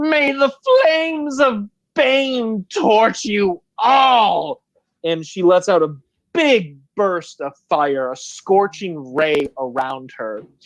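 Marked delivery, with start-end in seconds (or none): 0.0-4.6 shrill, very high, drawn-out witch's screech. As a villain melts into the floor, she cries her last curse, screeching. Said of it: "She screeches out".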